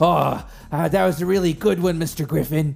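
breathless panting speech. Retelling how Gilroy, falling behind, spoke to Mr. Griffin; imitating Gilroy panting. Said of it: "And he pants, and he goes".

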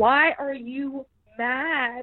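put-on very slow, drawn-out, high Southern accent. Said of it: "She was so much more Southern".

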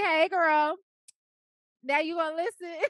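playful teasing. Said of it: "And Imma be like".

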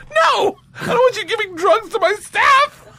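very high, slow, loud shout. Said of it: "He goes".

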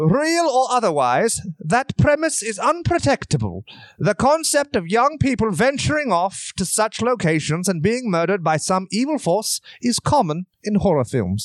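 put-on British accent. Reading a quoted passage aloud, the speaker switches to a put-on british accent. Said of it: "I'll just switch to British now".

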